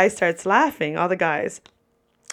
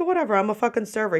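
ordinary talk, nothing marked

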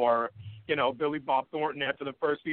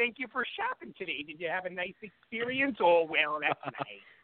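put-on Upper Midwest accent, higher pitch; 5 semitones higher than usual. Acting out a polite shop clerk: Fargo accent. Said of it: "It's like Fargo".

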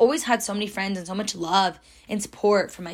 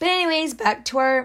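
cracked voice, breaking up high; 5 semitones higher than usual. Returning to the story after a tangent: voice cracking. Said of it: "my voice just cracked".

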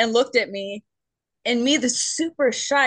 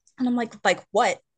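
usual speaking voice

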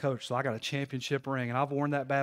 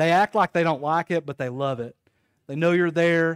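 plain

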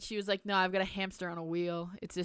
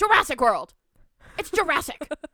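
put-on storming angry rant, higher and louder; 8 semitones higher, 11 dB louder than usual. Retelling storming into a sister's room: imitating own angry outburst. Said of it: "I storm into Riley's room".

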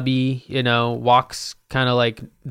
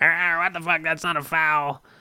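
mild yelled outburst from a man; 4 semitones higher, 4 dB quieter than usual. Describing an eerie basketball court, imitating some dude yelling. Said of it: "yelling like".

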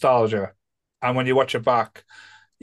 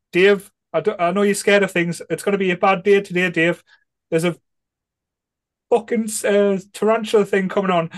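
faltering, hesitant, halting delivery, pitched higher; 7 semitones higher than usual. Retelling a comedy scene, quoting Holly warning Dave: imitating Holly. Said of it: "And then Holly's going".

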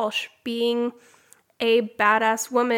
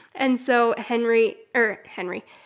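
ordinary talk, nothing marked

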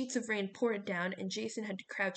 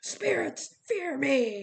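loud, high-pitched, roaring war-cry bellow; 6 semitones higher, 7 dB louder than usual. Narrator reading a coach leaping back onto a skywalk: bellowed. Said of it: "Hedge bellowed".

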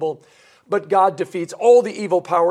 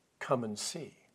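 much softer, strange-sounding voice. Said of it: "Philip responds rather strangely".

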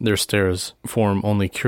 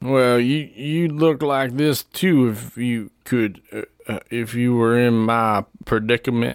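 put-on drunk, slurred speech; 4 semitones higher than usual. A narrator voicing a drunk young man speaking to the listener, slurred drunk voice. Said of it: "he slurs his words".

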